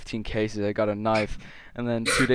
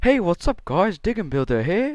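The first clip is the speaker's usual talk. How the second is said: very high, loud, sing-song voice; 9 semitones higher, 5 dB louder than usual. Trying your best at a YouTuber's video greeting, do an impression of a YouTuber's intro. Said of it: "trying my best impression of".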